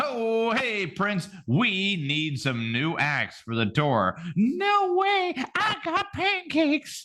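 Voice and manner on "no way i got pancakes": cartoonish voice, pitched way up. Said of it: "It's my best [name] voice right there".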